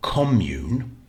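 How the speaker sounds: commune with stress on first syllable com-. Explaining how stress changes commune into a noun: stress on first syllable of commune. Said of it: "If you stress the first syllable".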